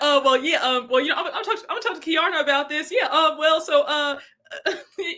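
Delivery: put-on stammer. Recounting a man's reaction when it came to the ring, imitating someone stuttering. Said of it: "He was stuttering".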